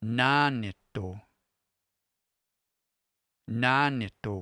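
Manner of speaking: nanito with high pitch on first syllable na. A teacher demonstrates pitch accent for listeners with raised pitch on the word. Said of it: "a raise in pitch in my voice".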